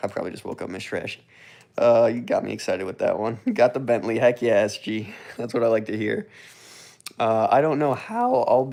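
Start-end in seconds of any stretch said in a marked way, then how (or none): 7.5-8.7 voice breaking and cracking mid-line. An excited ten-year-old speaker, mid-sentence: voice cracking. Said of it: "my voice just cracked".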